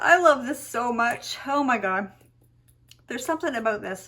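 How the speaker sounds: in tears, overcome, tearful gushing. Talking about a perfume from their past, the speaker is crying. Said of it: "I can't believe I'm crying about this".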